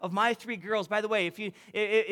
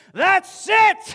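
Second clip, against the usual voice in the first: very loud, high, all-out top-of-lungs yell; 10 semitones higher, 11 dB louder than usual. A parent retells finally having enough of their kids, retelling a top-of-lungs yell. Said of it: "I just yelled at the top of my lungs".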